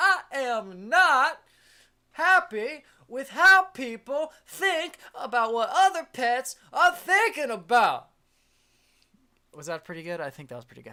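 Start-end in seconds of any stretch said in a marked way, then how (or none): 0.0-8.1 very high, very loud, very slow, drawn-out yelling. Ranting about how people think about pets: Samuel L. Jackson impression. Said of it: "I'm getting to Samuel L. Jackson territory".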